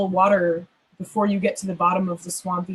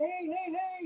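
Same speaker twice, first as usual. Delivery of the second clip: high, mild mock shout. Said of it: "all of those stones are just shouting".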